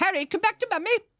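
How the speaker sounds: very high, clipped English woman's voice. Retelling how she politely called Harry back: imitating her clipped English voice. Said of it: "in her clipped English voice".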